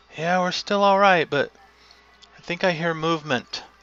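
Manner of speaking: high, carrying call out over a distance. Voicing people on a ship calling out to each other: calling out across a distance. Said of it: "calling out to each other".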